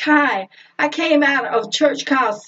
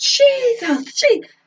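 mock very high pained cry, cut short; 10 semitones higher than usual. Retelling hitting a thumb in a dishwasher door: retelling own yell. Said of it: "I yelled out".

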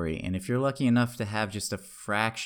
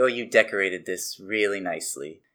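loud, patronizing, condescending backhanded tone; 5 dB louder than usual. Retelling how professors commented during her architecture reviews, imitating condescending professors. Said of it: "say in sort of a condescending way".

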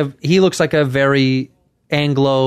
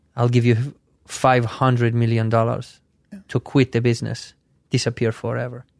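put-on Dubai accent; 3 semitones lower, 5 dB quieter than usual. Acting out a daydreamed man from Dubai: put-on accent of a man from Dubai. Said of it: "I didn't know he was from Dubai".

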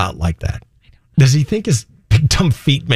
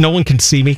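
plain

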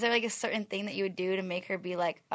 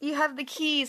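high, fake, put-on motherly voice; 7 semitones higher than usual. Retelling a friend's call pretending to be Mom: imitating friend's put-on mom voice. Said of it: "Did she put on a voice?".

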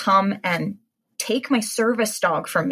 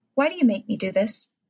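chilling, icy, creepy, cold, calm delivery. Retelling an argument with him, imitating his creepy, calm, cold tone. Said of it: "with this creepy, calm, cold tone, he says".

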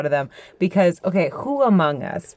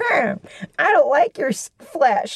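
very high, slow, tiny, furious swordfish voice; 9 semitones higher than usual. Retelling a game scene, the speaker voices the swordfish: angry little swordfish voice. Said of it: "And it's the angriest little swordfish".

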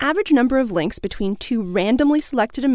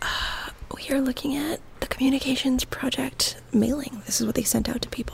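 hushed whisper. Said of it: "we had to whisper because, you know, library rules".

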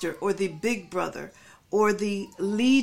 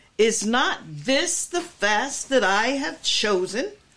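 stressed, pointed, emphatic delivery; 2 semitones higher than usual. Preacher quoting verse 6 aloud, emphatic question. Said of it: "the emphasis of the grammar is like that, the way that I said it".

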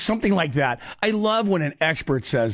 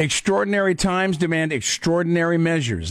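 ordinary talk

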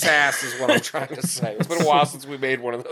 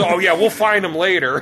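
ordinary delivery

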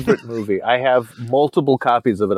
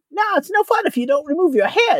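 very high, quick, cat-like creature voice. Describing an actor's creature role in Labyrinth, quoting him in a Labyrinth Firey cat voice. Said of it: "he's got a very cat voice right there".

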